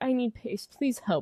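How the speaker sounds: acted, desperate, distressed pleading call. Retelling a driver's team radio call, imitating a distressed plea. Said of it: "He sounded very distressed in that".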